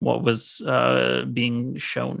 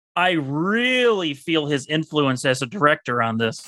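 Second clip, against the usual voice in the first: sarcastic, insincere tone with swooping pitch; 3 semitones higher than usual. Discussing a movie's director, the speaker reads out a direct quote: quoting someone sarcastically.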